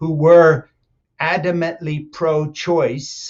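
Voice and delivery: very slow, deliberate emphasis, drawn out word by word. Making a point to a listener, announcing you'll say it slowly; said really slowly. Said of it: "I'll say this really slowly".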